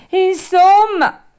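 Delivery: very high, very loud, shrill sobbing tearful shout. Narrator reads a sick boy refusing the fairy's bitter drink; shouted, bursting into tears. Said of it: "gridò Pinocchio, dando in uno scoppio di pianto".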